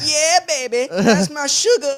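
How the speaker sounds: shrieking, very high, loud scream. Retelling the moment his name was called at graduation, retelling a scream. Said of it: "I started screaming and I went".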